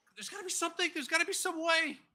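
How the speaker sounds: very high, very loud frantic desperation and panic. A player acting out his character trying to save Atlas, in desperate panic. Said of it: "Just desperately panicking".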